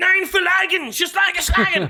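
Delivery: put-on high, furious rant in German. Imitating speeches by Hitler that sound so angry: imitating angry German speech. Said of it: "they sound so angry".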